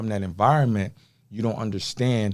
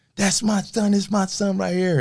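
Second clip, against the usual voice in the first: very high scream, acted out; 10 semitones higher than usual. Retelling his father seeing him in a magazine: imitating his father screaming. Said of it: "He just screamed".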